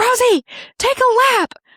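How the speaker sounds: put-on, very high, drawn-out holler. Retelling being yelled at by the coach: imitating Shannon yelling. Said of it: "Shannon yelled at me".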